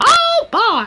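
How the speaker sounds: squeaked out, very high pitch. Showing a pretty decent Mickey Mouse voice. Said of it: "I can do a pretty decent Mickey Mouse voice".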